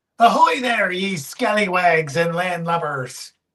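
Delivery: put-on pirate speech. Host opening a Talk Like a Pirate Day special, greeting the audience in pirate voice. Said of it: "Talk Like a Pirate Day".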